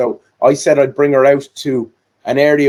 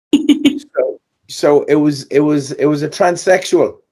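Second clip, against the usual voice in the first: normal talking voice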